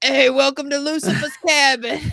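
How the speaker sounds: put-on loud, high-pitched New York accent. Retelling what someone joked while drinking with friends, New Yorker accent. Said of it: "Do that again".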